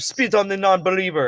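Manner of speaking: fake meme creature voice. Retelling a VR chat scene, imitating Ugandan Knuckles players. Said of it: "they're like".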